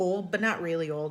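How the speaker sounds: plain reading voice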